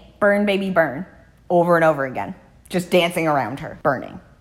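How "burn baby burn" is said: normal talking voice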